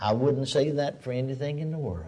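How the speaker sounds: put-on preacher whisper. Speaker retelling what a preacher said to them, imitating a whispered remark. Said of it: "Whispered it".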